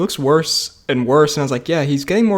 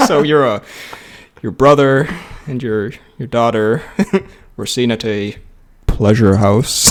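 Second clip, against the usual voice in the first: hesitant, slow, awkward, halting, stumbling; 4 semitones lower than usual. Retelling how the hand explained to the king: imitating a slow, awkward explanation. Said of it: "just super slowly and awkwardly".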